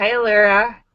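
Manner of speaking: normal talking voice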